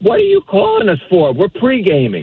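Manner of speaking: dismissive brush-off tone with swooping pitch. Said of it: "basically dismissive".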